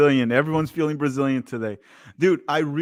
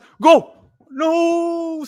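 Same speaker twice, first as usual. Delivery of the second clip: very high, loud commentator yell, not drawn out; 6 dB louder than usual. Commentating a Brazil match as a cross comes in, yelling. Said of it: "Sorry for yelling goal".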